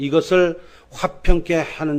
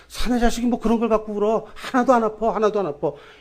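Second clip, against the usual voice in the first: pitched-up, soothing, coaxing adult voice; 7 semitones higher than usual. Retelling how adults hush a crying boy: imitating an adult soothing him. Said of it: "이렇게 달램으로써".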